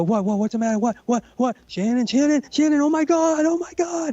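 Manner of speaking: mock very high, frantic, rising panicked babble. Retelling how a person reacted to a scream: imitating someone flipping out. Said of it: "he's, like, flipping out".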